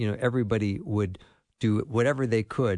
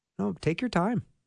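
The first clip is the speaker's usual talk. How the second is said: very high, sweet, very kind tone. Quoting a friend's reply to a frazzled woman at their table, imitating a very kind tone. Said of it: "He said it in the nicest way".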